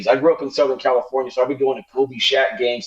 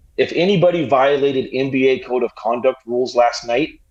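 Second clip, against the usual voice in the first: ordinary talk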